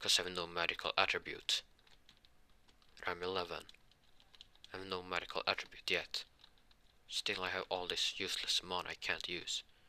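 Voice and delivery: plain reading voice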